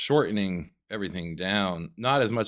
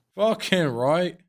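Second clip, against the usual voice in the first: vague, half-Scottish put-on accent, very high-pitched; 10 semitones higher, 4 dB louder than usual. Agreeing that a hook shot deserves a clip, in a vaguely scottish put-on accent. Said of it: "kind of Scottish".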